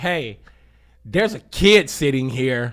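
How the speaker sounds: loud, slow, blunt delivery.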